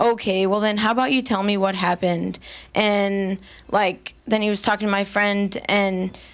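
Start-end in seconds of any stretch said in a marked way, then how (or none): 0.0-2.4 put-on sarcastic tone. Recounting what a man said when she asked to file a report, imitating a sarcastic tone. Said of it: "he kind of got like this sarcastic tone".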